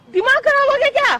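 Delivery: high, loud angry yelling. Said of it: "चिल्ला क्यों रही हो?".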